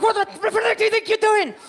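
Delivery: very high, shrieked screaming outburst. Describing how they act toward other drivers in traffic, acting out screaming in traffic. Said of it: "And I'm screaming".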